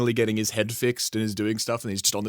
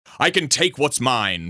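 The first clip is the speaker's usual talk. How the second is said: louder, stronger, more American accent; 5 dB louder than usual. Retrying the quote to sound more American: Homelander voice. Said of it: "I have to get it more American".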